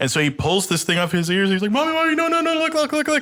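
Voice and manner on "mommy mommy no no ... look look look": frantic, panicked, very high pleading voice. Retelling a son begging his screaming mother: imitating panicked pleading. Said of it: "he's frozen in fear".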